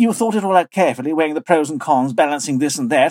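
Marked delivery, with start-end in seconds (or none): none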